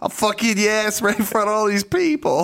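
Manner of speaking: goofy, squeaky, very high-pitched voice. Quoting a boxer from a video in his goofy voice: goofy Mike Tyson voice. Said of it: "His goofy ass voice".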